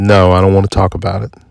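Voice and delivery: ordinary talk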